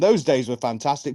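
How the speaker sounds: normal talking voice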